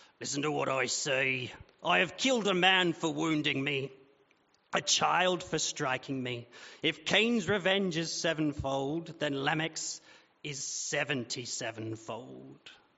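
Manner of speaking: mean-sounding pirate voice. Retrying Lamech's boast to his wives, the speaker goes meaner: Lamech pirate voice. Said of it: "He's probably not mean enough".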